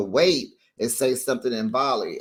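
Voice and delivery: ordinary talk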